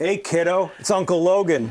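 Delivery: called out high and loud. Voicing a character over the ship's comm system: Uncle Logan voice. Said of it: "I hear the uncle voice".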